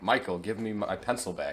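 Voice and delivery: ordinary talk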